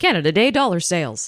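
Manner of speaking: very fast car-dealership commercial style. Showing how holiday commercials sound, say it really fast like a car-dealership ad. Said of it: "Say it really fast".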